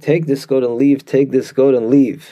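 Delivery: ordinary talk, nothing marked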